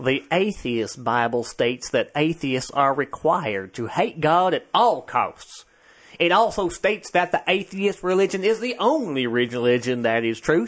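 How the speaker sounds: put-on Southern US accent. Reading a quoted passage aloud, in a put-on southern accent. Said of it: "You going to use your southern accent on this one? I will".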